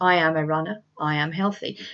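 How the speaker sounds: flat, half-hearted, unconvincing delivery with no conviction. Recalling how you used to talk to yourself, acting out unconvincing self-talk. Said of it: "I would talk to myself in that tone of voice. ... But it's not very convincing".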